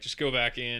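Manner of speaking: ordinary delivery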